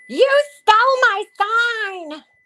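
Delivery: very high shrieking scream, "sign" drawn out. Recount a clip of Betty outside a house confronting people, imitating Betty screaming. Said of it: "she's screaming at these people".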